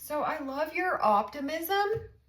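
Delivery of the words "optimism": the word optimism said loudly. Reading tarot cards for a viewer, loud on the word optimism. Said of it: "my voice got really loud with that word".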